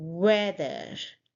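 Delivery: weather with stress on first syllable WEA. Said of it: "stress on the first syllable".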